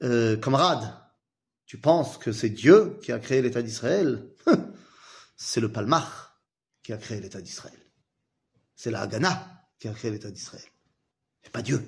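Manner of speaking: strong, thick put-on Russian accent.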